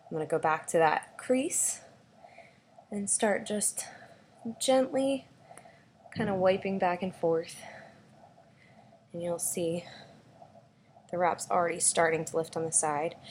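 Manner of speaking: breathless voice. Six months pregnant on a squat couch, speaker demonstrates wiping a crease: short of breath. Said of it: "I'm like totally short of breath".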